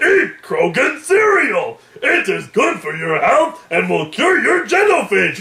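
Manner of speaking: put-on alien creature voice. Acting out a cereal mascot line: Krogan voice. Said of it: "It sounds like a human doing a Krogan voice. ... Like that".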